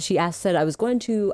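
ordinary talk

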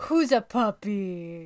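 put-on deep, doting dog voice, drawn-out "puppy". Asked whether they have a dog voice, the speaker demonstrates it: put-on dog voice. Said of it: "Do you have a dog voice that you do?".

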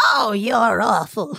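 put-on elderly lady voice, fondly scolding. Retelling what a 94-year-old nursing home resident said, imitating Annabelle's old woman voice. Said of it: "one of the voices that I used to do old women".

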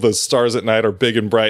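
usual speaking voice

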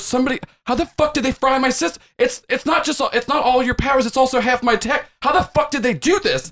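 mock-terrified voice. Retelling what he said while hitting buttons, imitating a terrified voice. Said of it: "like very terrified".

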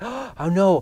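distraught, panicked, high cry. Speaker retells a student finding out midterms are today; imitating distraught panic. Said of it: "he was just distraught".

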